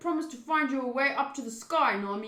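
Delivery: hard-boiled, tough gangster voice. The speaker retries a character's line to Nami in the gangster voice. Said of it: "in the gangster voice?".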